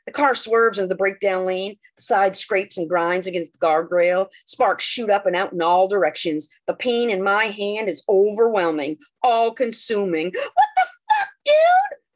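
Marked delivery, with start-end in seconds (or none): 10.3-11.9 very high, drawn-out, wailing soprano squeal. Reading a story after a knife pins the narrator's hand: voice jumping to soprano pitch. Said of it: "hits a soprano pitch it has never reached".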